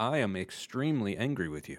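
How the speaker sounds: soft anger, stated very, very calmly. Showing extreme emotions expressed calmly: very calm statement of anger. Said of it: "Can you choose to express them very, very calmly? Like".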